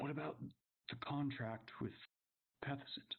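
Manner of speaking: hushed voice. Voicing a character asking about another contract: lowered voice. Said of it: "he lowers his voice now".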